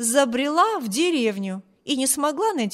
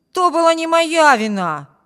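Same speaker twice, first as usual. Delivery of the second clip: raised, pitched-up exclaiming cry; 5 semitones higher, 8 dB louder than usual. A character defending himself against a mocking remark, exclaiming. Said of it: "воскликнул Виберт".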